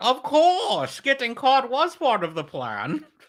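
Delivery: very high, loud, booming, swooping villain voice. Doing a Bane line that lands closer to Sean Connery. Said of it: "that was more Sean Connery than Bane".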